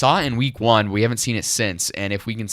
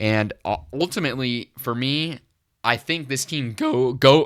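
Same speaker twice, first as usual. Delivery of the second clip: voice breaking and cracking mid-sentence; 3 semitones higher than usual. Giving a take on the team and its turnovers, voice cracking. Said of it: "the voice cracks today".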